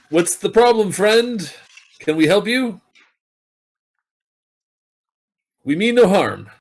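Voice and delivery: very high, loud in-character shout. Voicing a character calling out to a creature: character shouting. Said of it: "to shout".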